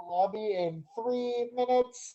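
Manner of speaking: loud, high, crackly loudspeaker announcer voice. Retelling a proposal among skaters, doing the crackly radio voice. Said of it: "the crackly radio voice being like".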